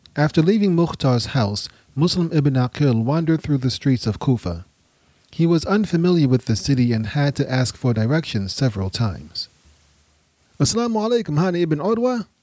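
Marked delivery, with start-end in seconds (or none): 10.6-12.3 glad, cheerful, high exclamation. A visitor greets the host on finding his house, exclaiming cheerfully.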